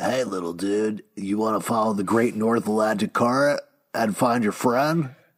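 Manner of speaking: put-on calm turtle voice. Quoting a favorite line from the book: imitating Crush. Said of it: "when Crush said".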